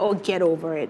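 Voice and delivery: plain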